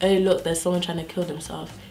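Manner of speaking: put-on breezy, quick, offhand, casual tone with no urgency. Retelling how a best friend pulled her aside and spoke; mock-casual, no urgency. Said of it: "in that tone".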